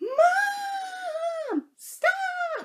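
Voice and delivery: very high, shrill, drawn-out, top-of-lungs scream. Chasing Mom's car while weighed down with Walmart bags, retelling a top-of-lungs scream. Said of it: "Top of my lungs".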